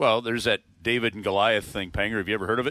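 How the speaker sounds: put-on low, bone-dry flat deadpan, no inflection. Retelling advice about fights, the speaker does a Jordan Binnington deadpan impression. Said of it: "Jordan Binnington just kind of deadpans".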